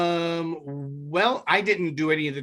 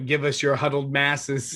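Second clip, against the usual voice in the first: ordinary delivery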